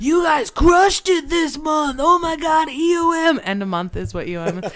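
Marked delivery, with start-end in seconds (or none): 0.0-3.4 excited, hyped-up cheering, higher and louder. Retelling what the vice president said at month's end: imitating a hyped-up boss.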